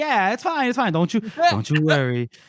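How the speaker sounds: sweet, high sing-song voice with pitch swooping up. Retelling a scene where Dogman comforts a wounded woman: sweet Dogman voice. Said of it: "he's being real sweet here".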